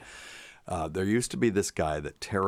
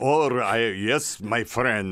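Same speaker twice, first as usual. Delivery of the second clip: clumsy fake Polish accent, loud and slow; 4 semitones higher, 5 dB louder than usual. Recalling a man's accent and trying it himself: bad Polish accent. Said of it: "that Polish accent that we all".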